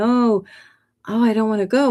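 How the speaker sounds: sobbing, tearful, breaking-down voice. Retelling own words to a being in a dream: retelling own crying plea. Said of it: "I started breaking down and crying".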